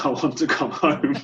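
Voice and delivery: crying, tearful pleading voice. Retelling a call home to mum on arriving abroad: imitating own past crying. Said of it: "I rang my mum crying".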